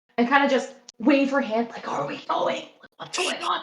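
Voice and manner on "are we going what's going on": soft, barely-there whisper. A player voices her character poking her head out and waving: quiet whisper. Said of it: "she's being like really quiet".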